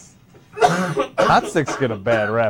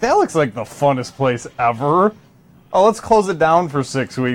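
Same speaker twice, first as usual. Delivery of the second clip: ordinary delivery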